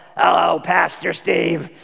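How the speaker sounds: gruff, rough-edged trucker voice. Retelling how an 85-year-old woman greeted the speaker, in a truck-driver voice. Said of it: "she sounded like she was a truck driver".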